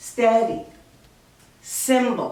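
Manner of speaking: stress on the first syllable. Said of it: "Accent's on the first syllable".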